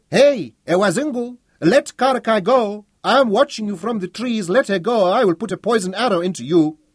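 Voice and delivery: high, shrill, loud voice that carries. Reading a story, Seppu calls from the trees to the man holding Karakai: high shrill voice. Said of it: "Seppu's voice shrilled through the trees".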